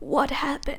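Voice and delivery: mock scared, startled, terrified alarm. Retelling mom's reaction to an unexpected call: imitating terrified mom. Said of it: "she's terrified".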